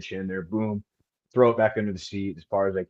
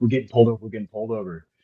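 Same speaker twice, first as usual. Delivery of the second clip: plain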